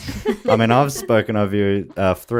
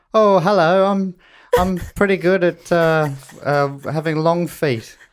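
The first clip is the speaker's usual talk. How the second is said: put-on British voice, higher pitch; 9 semitones higher than usual. Doing an impression of another speaker on request: impression of Dimity. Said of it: "Do my impersonation".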